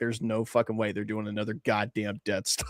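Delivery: put-on angry muttering under breath. Retelling what a man he looked over at said: retelling angry muttering under breath. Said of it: "I just heard him under his breath".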